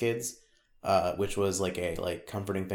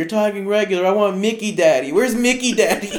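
put-on very high, loud, tearful crying-child wail; 13 semitones higher, 11 dB louder than usual. Retelling how his daughter reacted to his regular voice, imitating a crying child. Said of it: "his daughter would start crying and be like".

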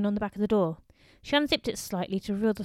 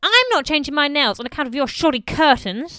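loud, shrieked outburst; 4 semitones higher, 7 dB louder than usual. Belinda answers Pauline's suggestion: shrieked. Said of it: "shrieked Belinda".

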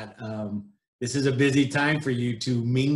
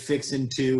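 usual speaking voice

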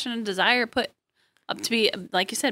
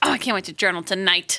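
ordinary talk, nothing marked

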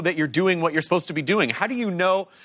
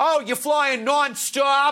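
put-on higher-pitched Boston accent; 7 semitones higher than usual. Retelling a transit cop's airport directions: imitating a boston accent. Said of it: "that's a Boston accent".

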